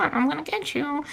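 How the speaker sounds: high, rasping voice, stretched out. Imitating the movie killer's phone voice: Donald Duck-like voice. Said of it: "It's not full Donald Duck because he'll go".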